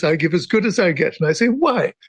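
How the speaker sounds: normal talking voice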